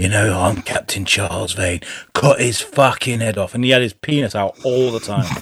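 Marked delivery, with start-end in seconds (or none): 0.0-3.5 deep, low, sinister and menacing voice. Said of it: "He has this very sinister voice in there".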